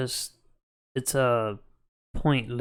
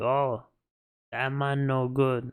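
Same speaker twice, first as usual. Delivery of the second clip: slow, put-on Caribbean accent. Quoting what parents say about a partner: put-on Caribbean accent. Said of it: "Why you guys doing a Caribbean accent?".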